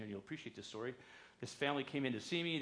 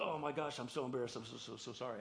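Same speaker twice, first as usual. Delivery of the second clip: plain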